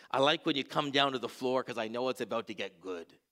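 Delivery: put-on low-pitched Scottish accent, old voice. A pastor quotes Sylvia, a churchgoer in her 80s, in her Scottish accent. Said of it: "She'd have this Scottish accent".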